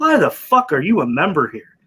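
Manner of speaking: put-on deadpan, flat and expressionless delivery. Speaker retelling a golfer's question to a club member, retelling Kisner's deadpan. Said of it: "Kisner looks at him deadpan and goes".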